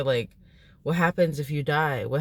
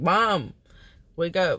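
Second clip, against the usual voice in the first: mock panicky, frightened little child voice; 3 semitones higher than usual. Retelling waking a mother who pretended to be dead: imitating own panicked plea. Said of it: "me, like, freaking out".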